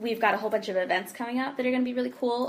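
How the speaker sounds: rushed, way-too-fast, rattling speech.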